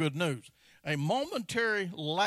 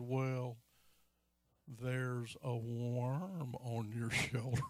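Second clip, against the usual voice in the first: put-on very slow, soft, drawling accent; 6 semitones lower, 8 dB quieter than usual. Retelling a story, quoting a lady who spoke with a slow accent. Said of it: "the lady had a real slow accent".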